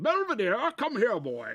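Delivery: very high, loud, swooping cartoon Southern general voice. Retelling a Bugs Bunny cartoon scene: imitating a cartoon Southern general. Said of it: "Maybe it was a Southern general".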